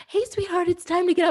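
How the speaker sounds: very high, syrupy sweet voice. Acting out a gentler way to wake oneself: put-on sweet voice. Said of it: "the sweetest voice".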